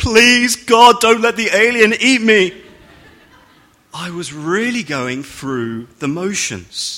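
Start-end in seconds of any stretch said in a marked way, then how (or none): 0.0-2.5 very loud, high, frantic, desperate pleading voice. Retelling a prayer during a scary ride: imitating a desperate prayer. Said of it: "I'm desperately praying".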